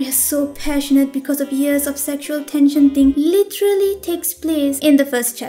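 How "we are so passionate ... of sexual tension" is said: plain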